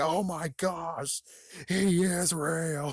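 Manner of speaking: acted-out, very slow, high, drawn-out panicked freaking out. Acting out someone freaking out at a discovery, imitating someone freaking out. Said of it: "freak out even more".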